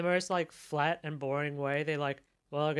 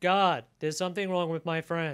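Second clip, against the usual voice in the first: imitated flat, lifeless reading, louder; 4 dB louder than usual. Retelling a movie scene, imitating Michael Madsen's line: flat, lifeless delivery. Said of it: "In the most flat and, like, lifeless way".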